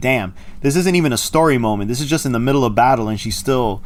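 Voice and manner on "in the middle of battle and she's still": normal talking voice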